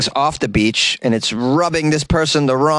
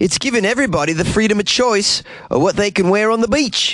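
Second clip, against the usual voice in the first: clumsy, very bad put-on Australian accent, pitched up; 7 semitones higher than usual. Reading a quote from people who want to free the peach, bad put-on Australian accent. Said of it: "I'm going to once again try the Australian accent".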